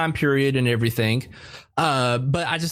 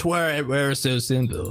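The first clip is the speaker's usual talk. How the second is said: put-on rural country accent. Reenacting a favorite scene's line for a co-host, in a country accent. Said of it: "a more country accent".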